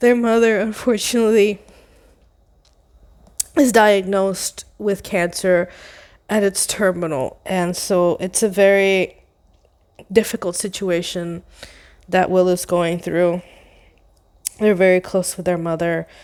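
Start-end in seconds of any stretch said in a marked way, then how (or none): 0.0-7.4 choked-up voice, on the verge of tears. Introducing a story right after a trigger warning, about to cry. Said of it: "I'm gonna cry, sorry".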